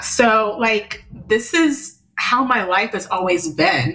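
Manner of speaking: moved, emotional, slow, full of feeling. In a conversation, agreeing with the other speaker, getting emotional. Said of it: "Sorry, I'm getting emotional".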